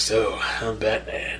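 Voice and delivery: breathy, whispered put-on voice, breathed out. Retelling how a comic character sounds, quoting him: Clint Eastwood voice. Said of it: "he's doing a Clint Eastwood voice".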